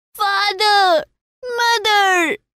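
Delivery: very high scream, shriek at the top of the voice. A child nearly trampled in a crowd calls for his parents, shrieking at the top of his voice. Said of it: "shrieked at the top of his voice".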